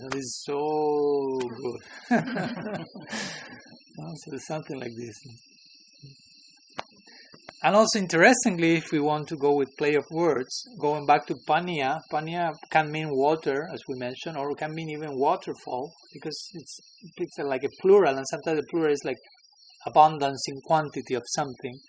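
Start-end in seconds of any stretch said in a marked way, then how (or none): 0.1-1.8 very slow, drawn-out, delighted. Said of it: "we speak in that way in our language".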